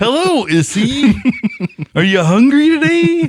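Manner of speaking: put-on high, loud kids'-show voice. Talking about talk shows, the speaker does a Barney voice. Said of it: "you like my Barney voice?".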